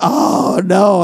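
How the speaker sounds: fake crying, mock weeping. Telling a joke about a man in the corner: mock weeping. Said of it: "a guy in the corner just weeping".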